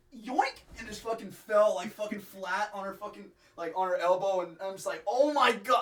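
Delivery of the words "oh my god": acted-out, high, stunned outburst of shock. Telling how he watched someone slip and fall in the shower, retelling his shocked reaction. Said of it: "I am like like in shock".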